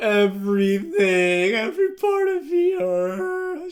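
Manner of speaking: very slow, high, loud, drawn-out tearful blubbering. Retelling a book scene with Jacob on the phone: imitating Jacob crying. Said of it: "Just, like, crying, like, on the phone".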